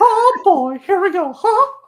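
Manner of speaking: very high-pitched, cartoon-loud voice. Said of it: "that sounded just like Mickey Mouse".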